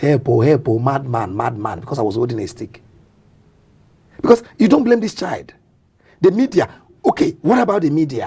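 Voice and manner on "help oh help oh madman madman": plain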